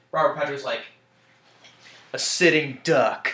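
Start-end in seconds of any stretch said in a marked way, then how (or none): 2.1-3.3 put-on intimidating, menacing voice. Retell Robert Patrick's reply to a SWAT team guy in a film, in an intimidating Robert Patrick voice. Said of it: "the intimidating voice that he had when he says that".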